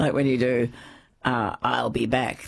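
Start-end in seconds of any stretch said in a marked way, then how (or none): 1.2-2.5 robotic action-hero voice, much slower. Talking about lines said in special voices, speaker demonstrates one: Terminator voice. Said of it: "The Terminator voice".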